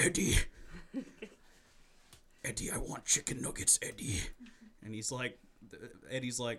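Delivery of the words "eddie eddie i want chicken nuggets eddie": insistent, pushy, nagging, pestering tone. Acting out a made-up movie scene at a Burger King: Venom voice. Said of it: "he's just like".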